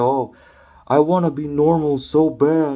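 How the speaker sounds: mockingly mimicked voice. Mocking a man the speaker is talking about, in a mocking imitation. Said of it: "I'm kind of mocking you".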